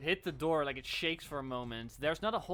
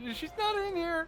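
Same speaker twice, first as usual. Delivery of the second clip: higher-pitched noble voice, called out; 4 dB louder than usual. Voicing a noble behind a battered door: hiding noble's voice calling out. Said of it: "It goes".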